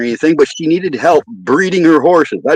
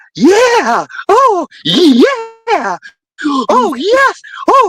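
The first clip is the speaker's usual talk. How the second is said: acted-out thrilled, excited cries, very high, slow, swooping. Retelling how a woman reacted while watching a stallion: imitating an excited woman's cries. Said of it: "she was fucking getting excited about it".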